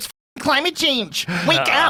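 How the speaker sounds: whiny, high-pitched whining voice. Mocking people who blame the fires on climate change: imitating a whiny liberal. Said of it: "this is a whiny liberal".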